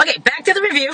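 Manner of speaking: high, laughing, light delivery.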